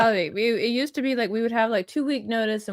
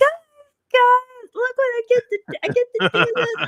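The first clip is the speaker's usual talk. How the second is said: very high, loud, excited gushing; 14 semitones higher, 5 dB louder than usual. Retelling gushing to everyone in the chat: imitating own excited self. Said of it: "in the chat with everybody being like".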